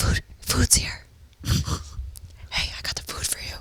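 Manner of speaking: whisper as small as a mouse. Imitating the other speaker announcing the food: imitating a little-mouse whisper. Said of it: "whispering like a little mouse?".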